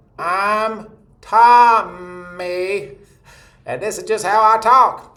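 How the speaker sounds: very high, very slow, bright ringing twang. Showing a voice people call nasal comes through the mouth: twangy, not nasal. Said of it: "it's not a nasal quality, that's really twangy".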